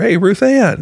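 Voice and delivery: very high, called-out yell. Retelling calling out to one of the directors at camp: imitating a yell. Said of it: "I yell at her".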